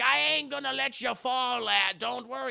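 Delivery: drawn-out, deliberate, high-pitched sailor drawl. Retelling a film scene, quoting Willem Dafoe holding the rope: imitating Willem Dafoe. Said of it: "He's like".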